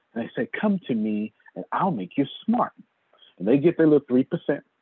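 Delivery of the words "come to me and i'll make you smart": mock sweet, really nice voice. Mocking pretty girls online who call renting stupid: imitating a real nice voice. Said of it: "they do it in a real nice voice".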